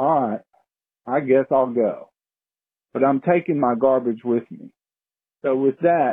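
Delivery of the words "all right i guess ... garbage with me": ordinary talk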